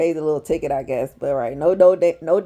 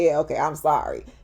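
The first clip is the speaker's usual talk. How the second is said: grudging, passive-aggressive, barely meant; 3 dB quieter than usual. Retelling how he finally apologized, imitating Eugene's passive-aggressive sorry. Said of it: "passive aggressive like".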